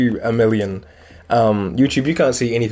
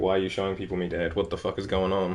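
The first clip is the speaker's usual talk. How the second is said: cat voice, lower and quieter; 4 semitones lower, 11 dB quieter than usual. Showing viewers the cat on the bed, voicing his cat's thoughts. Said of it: "now he's like".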